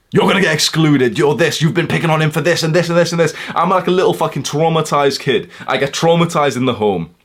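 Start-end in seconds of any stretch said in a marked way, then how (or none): 0.1-3.3 play-acted, furious adult screaming rant. Retelling how an adult confronted them: imitating an adult screaming. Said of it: "adult is screaming in my face".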